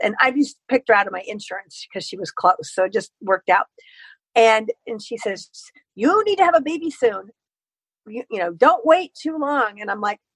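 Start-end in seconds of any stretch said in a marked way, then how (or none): 6.0-9.8 put-on Hungarian-accented doctor voice, pitched up. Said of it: "she had the same accent".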